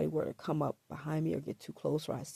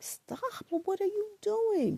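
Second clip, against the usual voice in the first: put-on shrill yell, pitched way up; 4 dB louder than usual. Retelling a struggle, quoting own past words: retelling own yell. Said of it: "I'm yelling".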